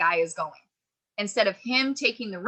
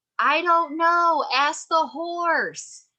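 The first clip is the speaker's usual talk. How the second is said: very slow, loud, high, stretched-out scream; 7 semitones higher, 5 dB louder than usual. Retelling a horse-riding parable, the rider's reply: imitating a scream. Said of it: "And the guy screamed".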